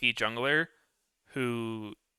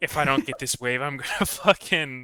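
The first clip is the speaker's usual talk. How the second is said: mock defeated, deflated-sounding voice. Recalling a scrim, a teammate imitates a friend sounding defeated. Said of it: "you sounded so fucking defeated in your voice".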